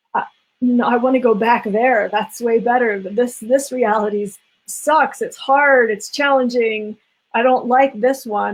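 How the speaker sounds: weepy, tearful, sobbing, crying tone. Retelling coming out of an acupuncture session: imitating own past crying. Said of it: "I would literally come out of the session crying".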